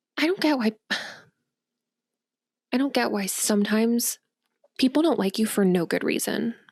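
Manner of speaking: pouty, sulking, pouting grumble. Narrating a scene, the reader gives Frost's line: pouting. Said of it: "like a pout".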